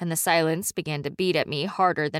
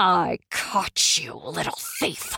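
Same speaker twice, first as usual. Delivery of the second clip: slow, drawn-out hiss. A woman grips the narrator's wrist tightly and hisses into their face. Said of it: "she hissed into my face".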